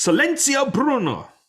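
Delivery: very high, loud, emphatic, forceful, commanding shout. Repeating a movie mantra to silence doubting voices: said like you mean it. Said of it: "you gotta say it like you mean it".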